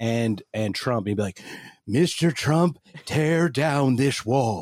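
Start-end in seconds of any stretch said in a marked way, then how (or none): 1.9-4.6 slow, deliberate, formal speech-like delivery. Joking about a conversation between two presidents: Ronald Reagan impression. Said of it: "I could have a conversation with Ronald Reagan".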